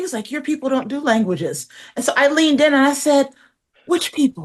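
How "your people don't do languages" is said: hushed, half-whispered, under the breath. Recounting what a man said in a conversation, imitating his half-whisper. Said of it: "he kind of whispered it".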